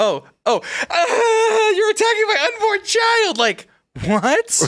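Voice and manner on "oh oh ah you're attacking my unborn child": very high, slow, put-on tearful distressed voice. Mocking a woman seen on video who claimed attack: imitating her fake distress. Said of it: "But then to be like".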